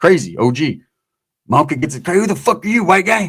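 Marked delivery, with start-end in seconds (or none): 2.0-3.3 put-on drunk man voice, higher. Retelling a drunk uncle getting into the car: imitating a drunk uncle. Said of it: "My uncle's all blasted".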